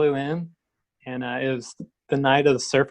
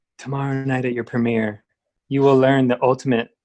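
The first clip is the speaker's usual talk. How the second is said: put-on whispered voice. Retelling what a man whispered in the speaker's ear; retelling a whisper. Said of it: "He like whispers in my ear".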